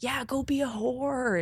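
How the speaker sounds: put-on, very slow, high, drawn-out jeering scream. Retelling what a guy in a circling truck screamed: imitating a man screaming. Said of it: "one of the guys just screams out".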